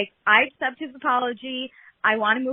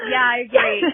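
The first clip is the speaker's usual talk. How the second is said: louder put-on laughing voice; 4 dB louder than usual. Retelling how Katie answered: imitating Katie laughing while talking. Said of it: "But then she's laughing".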